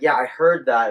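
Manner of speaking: ordinary talk, nothing marked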